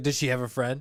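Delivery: excited delivery. Retelling a film scene where a character gets all excited: imitating someone getting excited. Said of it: "he gets all excited".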